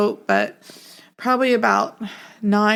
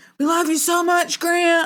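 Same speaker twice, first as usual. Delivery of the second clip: yelling, higher pitched; 8 semitones higher than usual. Retelling what a visiting friend said at a bedside: imitating a friend yelling. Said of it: "but he was, like, yelling".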